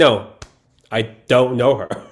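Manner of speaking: ordinary talk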